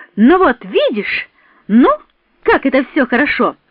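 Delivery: delighted, joyful outburst. After Sonya reads her the diary, the narrator exclaims joyfully. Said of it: "радостно воскликнула я".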